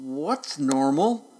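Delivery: slow, lazy, stretched-out drawl. A possum hanging by his tail answers the other animals, drawling. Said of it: "Drawled the possum".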